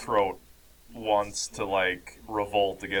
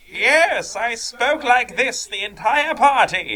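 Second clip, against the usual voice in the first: very high, loud, slow, drawn-out wizard voice; 9 dB louder than usual. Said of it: "my wizard voice".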